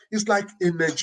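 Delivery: ordinary delivery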